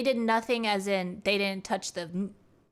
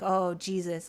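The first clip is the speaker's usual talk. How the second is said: imitated stunned disbelief, much lower; 3 semitones lower than usual. Acting out a man's reaction heard as he leaves the car; mimicking stunned disbelief. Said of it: "in a state of like just like what what the fuck".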